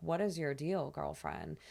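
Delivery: ordinary talk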